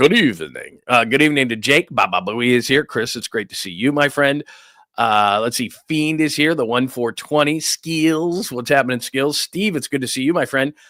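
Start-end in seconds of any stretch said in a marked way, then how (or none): 0.0-0.8 deep vampire-style voice. Saying good evening while greeting people on the show, in a vampire voice. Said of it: "I sound like a vampire".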